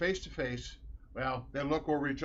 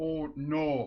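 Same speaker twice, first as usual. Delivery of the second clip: rounded o's through the nose. Showing how they say it, with round nasal O's. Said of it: "The O's are always real round and it goes through the nose a lot".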